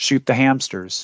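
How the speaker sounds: plain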